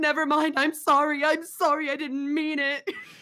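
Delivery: jumpy, scared, very high and loud frightened voice. Retelling being jump-scared while playing Dead by Daylight, retelling a scared apology. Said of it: "jump scares me".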